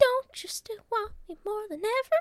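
squeaking way up at the top of range. Retelling a film scene, quoting the woman's reply: Mickey Mouse voice. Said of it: "all my voices are now Mickey Mouse".

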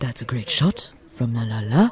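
hushed, half-whispered commentator voice. Showing how snooker commentators talk: imitating a snooker commentator half-whisper. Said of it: "They whisper".

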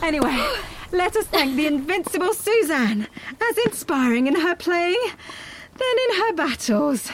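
puffing, breathless and winded. Right after a set, the speaker pays tribute to suzanne while out of breath. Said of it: "I'm completely out of breath".

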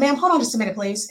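plain

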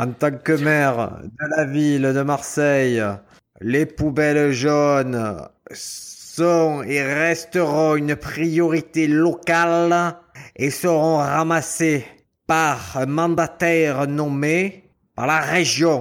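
put-on slow speech with a strong, laid-on Marseille accent. Addressed on air as the mayor of Marseille, speaker answers: slow Gaudin impression, strong accent. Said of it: "il parle très lentement avec un accent prononcé".

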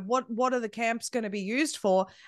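ordinary delivery

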